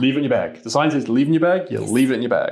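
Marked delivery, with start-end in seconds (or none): none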